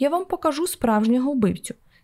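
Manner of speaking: ordinary delivery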